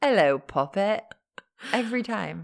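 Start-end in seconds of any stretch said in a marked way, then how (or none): 0.0-1.0 put-on Cockney accent. Teasing another speaker who always goes Cockney: imitating a Cockney accent. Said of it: "you always go Cockney".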